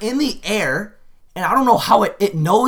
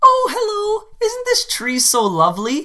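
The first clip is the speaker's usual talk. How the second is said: put-on cutesy, sweet little old-lady voice, pitched up; 9 semitones higher than usual. Retelling what an old lady on the street said: imitating a cute old lady. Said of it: "the cutest old lady you've ever seen".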